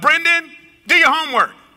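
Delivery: put-on high yelling. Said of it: "she yells out".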